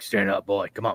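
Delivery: hushed, soft, gentle, coaxing half-whisper. Retelling how he grabs your neck gently: imitating a half-whisper. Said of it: "whispers down".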